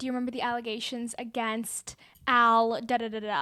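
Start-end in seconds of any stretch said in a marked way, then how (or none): none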